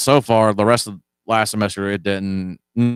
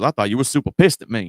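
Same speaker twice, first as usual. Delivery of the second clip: fast, put-on country accent slipping out. Retelling what a guy said to the speaker, in a country accent. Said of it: "Didn't mean to give him a country accent".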